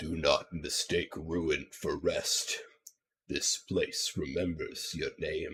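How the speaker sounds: low, soft, rumbling voice with an awed tone. Voicing an awful presence heard both in the head and out loud, low rumbling voice. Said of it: "in a low voice, you can just hear it rumbling".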